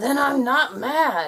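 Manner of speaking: slow, irritated, still audibly angry voice. Insisting to a sleepless companion they are not upset, sounding mad. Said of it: "That still sounds mad".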